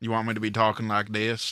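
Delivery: put-on deep Southern boy accent. Asking the others if this is the accent they want, in a deep Southern accent. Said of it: "deep Southern boy accent".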